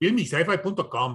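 mock Mexican-accented pronunciation. Speaker saying a website name the way it's said in a chicago neighborhood, mexican accent. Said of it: "in a heavy Mexican neighborhood".

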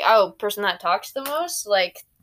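normal talking voice

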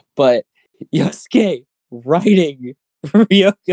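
giggling, laughing through very slow words. Bringing up the first point to discuss, laughing while talking. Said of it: "I'm trying to stop laughing".

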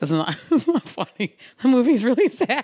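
talking through laughter. Talking about a sad movie with another speaker, laughing while talking. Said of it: "I don't know why I'm laughing".

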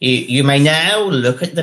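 loud, grand upper-class voice. Recalling the Queen opening a gallery, doing the Queen voice. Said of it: "that's my Queen voice".

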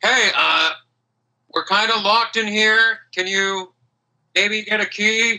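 put-on dwarf character voice, calling out. Game narrator voicing a dwarf calling from the other side: dwarven voice crying out. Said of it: "You hear a dwarven voice cry out".

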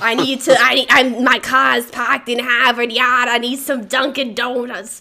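put-on over-the-top Boston accent. Quoting a dude who walked in wanting Dunkin Donuts, thick Boston accent. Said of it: "the most Boston-ass accent ever".

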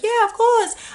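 very high-pitched voice. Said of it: "She's like [name]".

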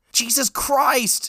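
shrill, high-pitched shout rising way up. A driver stuck behind a slow car at an intersection, shouting. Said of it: "Steve shouted".

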